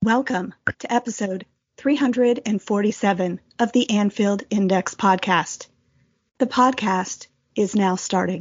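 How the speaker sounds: artificial computer voice. Opening the podcast episode as the announcer, in a computer voice. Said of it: "that computer voice".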